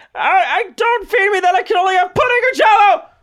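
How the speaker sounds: very high, loud character voice. Imitating an actor's portrayal of a real person in a movie: Claire Danes as Temple Grandin impression. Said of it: "I'm doing Pat Powers' impression of Claire Danes' impression of Temple Grandin".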